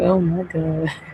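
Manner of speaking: mock words bubbling through laughter. Retelling own reaction to a recording: retelling own laughing reaction. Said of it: "I was over here li-, like, laughing".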